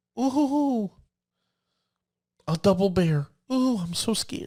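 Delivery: sarcastic pretend fear, high-pitched and slow. Commenting on an opponent's card, sarcastically pretending to be scared. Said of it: "I'm being facetious there. Me being scared".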